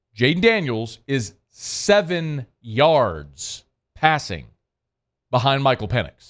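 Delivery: slow, deliberate, "yards" drawn out. A speaker says a statistic again for emphasis, slow deliberate repeat. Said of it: "Let me say that again slowly".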